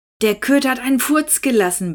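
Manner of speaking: fed-up, high-pitched complaining grumble. Narrating a story, Hinnerk answers Lina's question, complaining. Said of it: "beschwerte er sich".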